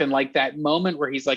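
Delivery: ordinary delivery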